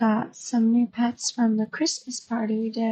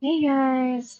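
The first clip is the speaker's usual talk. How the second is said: flat, unenthusiastic, low energy; 2 semitones higher than usual. Retrying a greeting after a first try: unenthusiastic greeting. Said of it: "That didn't really have much enthusiasm either".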